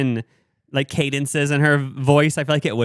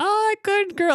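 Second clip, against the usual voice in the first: squeaky, very high pet-talk voice. Showing how people talk nonsense to their pets, in high-pitched pet talk. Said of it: "saying like nonsense in a high voice".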